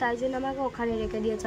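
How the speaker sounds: ordinary delivery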